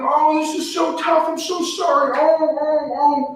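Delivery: very slow, high, drawn-out fake sobbing. Acting out sitting down and crying with a struggling viewer: mock crying. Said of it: "I can sit down and cry with you".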